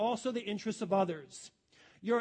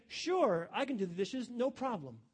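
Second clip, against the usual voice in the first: genuinely cooperative, willing, agreeable tone. Showing how tone changes meaning when asked to do the dishes, willing, agreeable tone. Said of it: "same thing with a different tone and attitude".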